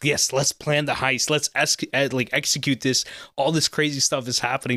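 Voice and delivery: ordinary talk, nothing marked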